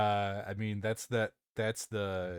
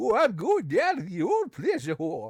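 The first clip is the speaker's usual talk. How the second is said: put-on old prospector voice, much higher pitch; 11 semitones higher, 5 dB louder than usual. Doing a favourite character voice in an old prospector voice. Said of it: "I call it my old my old prospector voice".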